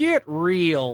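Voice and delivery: muttered under the breath, with "real" stretched out. Showing how they mutter a line under their breath in his voice: imitating David Lynch. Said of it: "just in his voice".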